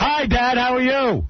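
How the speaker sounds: shouting. Greeting dad, who has trouble hearing: yelling. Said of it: "I'm yelling 'cause I know you have trouble hearing".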